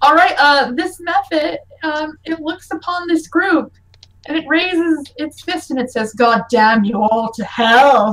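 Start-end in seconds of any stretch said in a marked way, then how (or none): 6.1-8.1 big, low, deep monster creature voice. Narrating something that raises its fist at the group and speaks: deep voice. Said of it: "it has such a deep voice".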